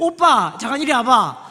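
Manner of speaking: loud, bossy, scolding voice. Preacher shows the congregation how women call to church young men, mock-scolding call. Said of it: "막 이런 것만 하니까".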